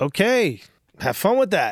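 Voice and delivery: very dry cutting tone. Retelling what Chad's assistant said walking in behind them, imitating a dry, sharp tone. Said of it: "with that very dry, sharp thing".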